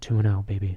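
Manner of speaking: low, sultry, seductive bedroom voice. Joking about a quarterback winning two games: put-on sex voice. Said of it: "Don't get your sex voice on".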